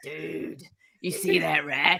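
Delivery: very slow, rough, creaky drawl, "dude" dragged out. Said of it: "you gotta get the dude right".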